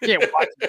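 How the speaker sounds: mock very high, affronted, offended voice. Retelling how a dad scolded about watching tapes out of order: imitating his offended dad. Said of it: "He was, like, offended".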